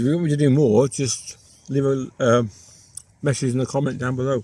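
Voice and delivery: speaking through a mouthful of food. Cooking video host asks viewers for comments while eating, talking with mouth full. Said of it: "I'm sorry, I got a mouthful".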